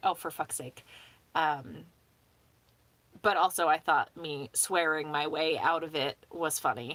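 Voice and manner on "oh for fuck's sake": usual speaking voice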